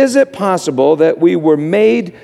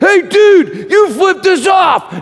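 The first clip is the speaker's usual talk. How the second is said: very high-pitched, drawn-out, stretched-out screaming; 13 semitones higher than usual. Retelling guys jumping out of their Jeep: imitating guys screaming. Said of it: "jumped out of their Jeep screaming".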